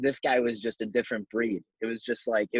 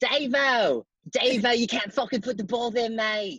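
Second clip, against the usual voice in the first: imitated old coach voice with Australian accent; 12 semitones higher than usual. Imitating their old coach from Bowie, in [name]'s Australian accent. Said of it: "Can we hear that best Aussie accent?".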